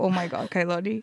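ordinary talk

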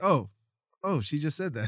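normal talking voice

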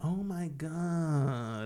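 put-on soft whiny teenager voice, "God" drawn out. Describing how teenagers talk, the speaker is mimicking whiny teenager voice. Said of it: "that sort of whiny voice that they use".

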